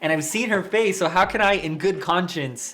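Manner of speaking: hyped-up rant, high and loud. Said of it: "Sorry, I'm getting so hyped about it".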